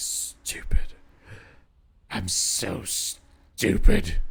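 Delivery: put-on low mutter. Retelling what a neighbor muttered after walking off: imitating Eileen muttering under her breath. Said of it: "mutter under her breath".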